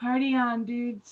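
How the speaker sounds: very quiet, hushed. Voicing a character answering the crowd: very quietly. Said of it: "Velveeta very quietly goes".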